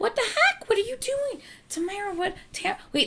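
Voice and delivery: high-pitched, startled, baffled outburst.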